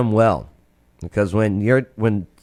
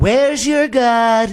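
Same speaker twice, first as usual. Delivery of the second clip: put-on mocking taunting tone, higher; 10 semitones higher than usual. Retelling a prophet taunting rival prophets: imitating Elijah mocking. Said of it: "So Elijah was mocking them all".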